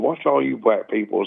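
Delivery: ordinary delivery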